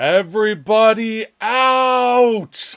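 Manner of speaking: top-of-the-lungs, no-nonsense, drawn-out bellow. A player in a tabletop game voicing a planned action, bellowing at top of lungs. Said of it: "bellow at the top of my lungs in a no nonsense voice".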